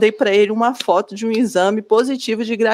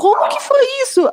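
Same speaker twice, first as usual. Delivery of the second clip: much higher, startled voice. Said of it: "Ele falou assim".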